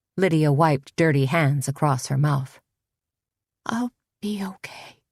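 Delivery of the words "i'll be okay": sad, hopeless, beaten-down defeated whisper. Bleeding, a woman answers her friend's worried questions in a sad, defeated whisper. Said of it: "she whispered in a sad, defeated tone".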